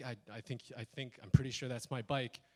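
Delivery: ordinary delivery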